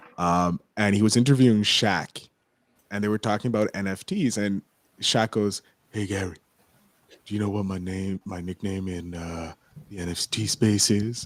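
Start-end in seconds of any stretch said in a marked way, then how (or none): 5.9-11.3 deadpan monotone impression. Retelling Shaq being interviewed by Gary V about NFTs, monotone Shaq impression. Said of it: "with his like his like s- like monotone voice".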